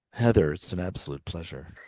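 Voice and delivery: very low-pitched on-air radio announcer voice. Asked to say it again, repeating the line in a radio voice. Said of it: "could you say that again?".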